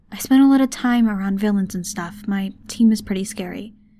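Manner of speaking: ordinary delivery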